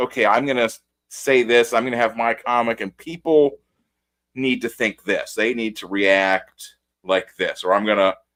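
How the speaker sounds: normal talking voice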